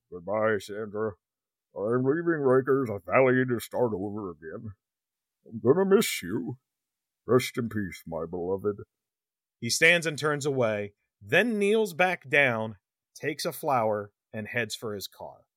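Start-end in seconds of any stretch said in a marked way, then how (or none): 0.1-8.7 low voice, each word carefully articulated. Reading a character's lines aloud, in a carefully articulated Ted Levine voice. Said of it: "I'm trying to articulate it as best I can to make it audible".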